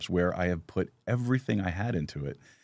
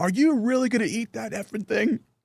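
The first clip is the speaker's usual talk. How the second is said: loud, very high sudden blurted outburst, acted; 4 dB louder than usual. Retelling how your dad reacted as you cut the steak in a restaurant, imitating a loud outburst.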